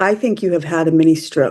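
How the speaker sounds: ordinary delivery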